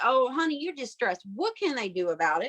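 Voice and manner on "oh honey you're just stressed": normal talking voice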